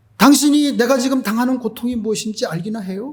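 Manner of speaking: high-pitched, furious, angry male voice lashing out. Retelling how a man answered a missionary, imitating an angry man. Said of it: "이러면서 막 화를 내는 거예요".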